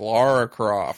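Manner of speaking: poorly faked American accent. Mocking an actor's bad American accent in a film: imitating Daniel Craig's bad American accent. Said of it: "it's so fucking bad".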